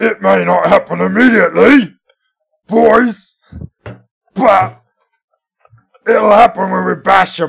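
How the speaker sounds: rasping, rough orc cry, very high and very loud. Giving a motivational speech for the Iron Jaws faction: orc voice. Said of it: "But in an orc voice".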